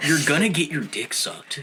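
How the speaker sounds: laid-back surfer dude voice. Giving advice to an eighteen-year-old self: Beach Bro voice.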